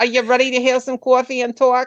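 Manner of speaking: put-on New York accent. Speaker retells a friend's morning phone calls, imitating Linda's New York accent. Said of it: "That's how she talks".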